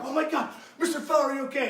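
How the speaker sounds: put-on freaking-out voice. Retelling running up to an injured player, imitating own panic. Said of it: "So I'm freaking out now".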